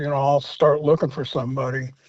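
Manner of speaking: usual speaking voice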